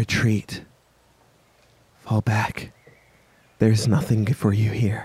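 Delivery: woman's voice, whispering. Voicing a voice the party members hear: woman whispering. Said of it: "the voice of a woman whispering to you".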